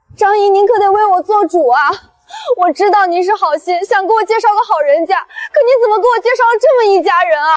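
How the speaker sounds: tearful, crying, begging voice. Yueyue begs Aunt Zhang to stand up for her, crying while pleading. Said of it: "你别哭".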